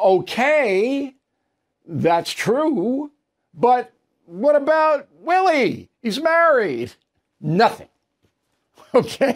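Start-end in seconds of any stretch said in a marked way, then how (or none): 0.0-6.9 incredulous outburst, shouted up high in disbelief. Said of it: "I went".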